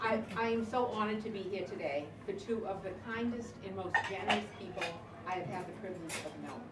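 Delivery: plain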